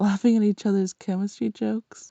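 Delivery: ordinary delivery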